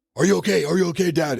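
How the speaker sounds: very high yell, repeated over and over. Retelling a bike crash, quoting the other rider: imitating someone yelling. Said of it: "he's yelling at me".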